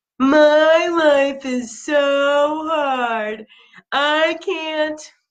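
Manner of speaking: whiny, complaining victim voice, high, very slow, drawn-out. Recounting an exercise of telling partners limiting beliefs, in a whiny, complainy, victim-y voice. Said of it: "most whiny, complainy, victim-y voice".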